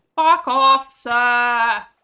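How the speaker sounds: loud, really furious yell. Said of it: "I'm really mad about it".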